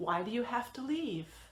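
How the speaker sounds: falling intonation ending downward on leave. Demonstrating a WH question in an English lesson, with falling intonation. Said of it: "All of these have a falling intonation".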